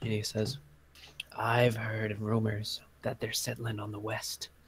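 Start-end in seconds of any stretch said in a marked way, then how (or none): 1.4-4.5 hushed, very quiet, confiding leaning-in voice. A game master voicing a character who leans in close, real quiet. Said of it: "he leans in real close, real quiet".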